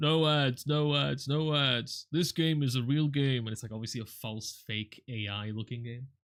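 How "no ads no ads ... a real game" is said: slow, canned, robotic AI advert announcer voice. Mocking an ad for a mobile game, mocking an ai voice guy. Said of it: "like a AI voice guy going".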